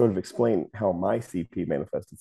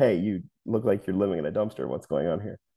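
ordinary delivery

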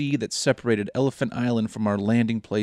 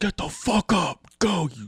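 mock, very slow, high, drawn-out bellowing drill-sergeant scream; 7 semitones higher than usual. Imagining a presence urging a fallen man on: pretend drill sergeant screaming. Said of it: "just screaming at him".

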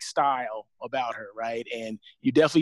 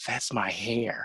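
secretive, quiet, hushed whisper; 5 semitones lower, 6 dB quieter than usual. Retelling what she whispered so no one else would hear, retelling a whisper. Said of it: "And she whispers to me".

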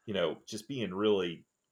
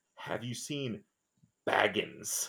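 hissing hooded figure voice. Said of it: "hissing person comes up to his door and says".

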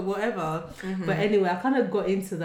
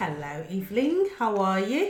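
put-on Cockney accent with swooping sing-song tune. Podcast host greets her co-host evelyn in a cockney accent. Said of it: "That was like some Cockney".

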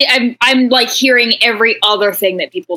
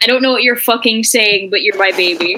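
normal talking voice

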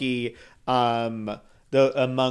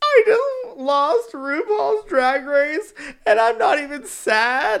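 very high, drawn-out bawling through tears; 14 semitones higher, 4 dB louder than usual. Retelling a video of a contestant who lost: imitating Crystal Methyd bawling. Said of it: "As she's, like, bawling".

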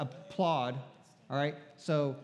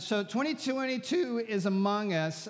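high voice cracking and breaking mid-line; 7 semitones higher than usual. Speaker addressing a gathered audience, voice cracking. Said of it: "sorry for the voice cracking".

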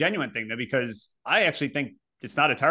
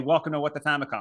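normal talking voice

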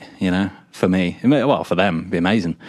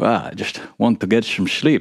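bad put-on Scottish accent. Retelling haggling over a dorm room, doing a bad Sean Connery voice. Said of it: "put on my, uh, what's his name? Sean Connery voice".

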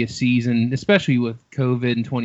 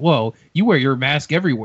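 put-on, mocking delivery. Recounting a debate moment, quoting one candidate's jab at the other: retelling a mocking jab. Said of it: "kind of like mocking him".

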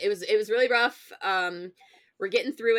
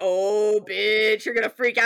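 put-on mocking, teasing tone, louder; 6 dB louder than usual. Retelling how friends texted during spoiler leaks: imitating a mocking taunt. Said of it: "mocking me, being like".

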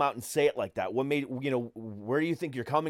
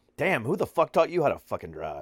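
mock passive-aggressive, sarcastic, swooping tone. Retelling venting at a driver in a parking lot: imitating own passive-aggressive sarcasm. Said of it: "that passive-aggressive, sarcastic guy".

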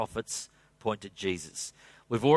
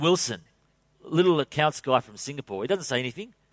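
normal talking voice

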